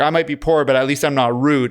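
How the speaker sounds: ordinary delivery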